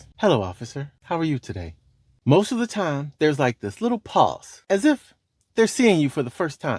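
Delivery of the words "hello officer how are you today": calm, quiet, soft-spoken, even delivery. Showing how to greet an approaching officer, in a calm and quiet voice. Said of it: "in a calm and quiet voice".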